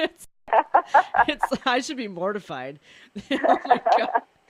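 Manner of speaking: loud, laughing through words.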